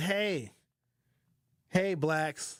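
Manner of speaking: offhand, casual delivery.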